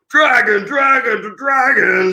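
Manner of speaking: worked-up, angry dragon voice, very high. Retelling a book scene where the dragon president gets mad: mock-angry dragon president. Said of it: "the president's getting all mad and going".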